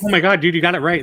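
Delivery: put-on, very loud, rushed burst of excitement. Retelling praising a script buddy: retelling own excited praise. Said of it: "Sometimes I'm excited, like".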